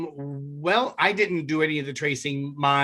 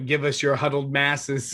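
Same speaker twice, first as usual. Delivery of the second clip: normal talking voice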